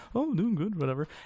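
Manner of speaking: put-on Liverpool accent. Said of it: "Why does he sound like a Beatle?".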